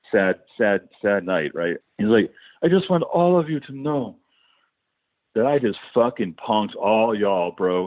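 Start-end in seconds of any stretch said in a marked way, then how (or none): 2.6-7.8 put-on Texan accent. Retell David's reveal to the group huddled in the parking lot, in David's Dallas Texan accent. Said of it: "his voice completely changed into this Dallas Texan accent".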